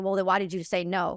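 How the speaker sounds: ordinary talk, nothing marked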